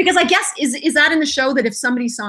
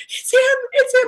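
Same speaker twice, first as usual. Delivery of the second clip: very high-pitched, teary, starstruck, awed voice; 14 semitones higher than usual. Retelling a starstruck fan's reaction, imitating someone tearful. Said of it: "with tears in her eyes going".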